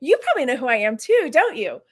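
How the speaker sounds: copied self-important, excited woman's voice. Retelling what a woman asked the speaker, imitating how she talked. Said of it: "She was talking just like that too".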